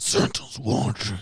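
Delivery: shadowy, masked vigilante superhero voice. Describing how to scare someone from under their bed, in a Batman voice. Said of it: "when the Batman voice be like".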